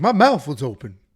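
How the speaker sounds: loud cartoon talking-donkey sidekick voice. Retelling a Shrek movie scene, the speaker quotes Donkey: Donkey voice. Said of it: "That's my Donkey impression".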